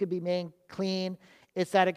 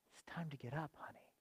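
very soft, gentle, tender, hushed, quick whisper; 5 semitones lower, 22 dB quieter than usual. Retelling how Jesus takes her by the hand, the speaker quotes with put-on tenderness. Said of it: "You can hear it in my voice. There's a tenderness there".

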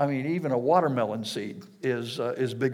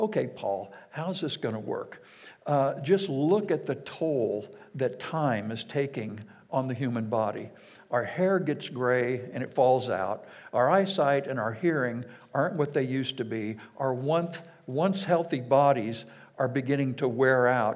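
usual speaking voice

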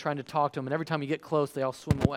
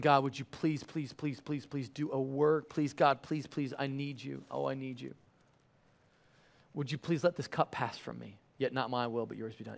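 put-on agonized, anguished pleading, quieter; 6 dB quieter than usual. Retelling the repeated prayer after the others fall asleep: imitating agonized pleading prayer. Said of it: "And he's praying, saying".

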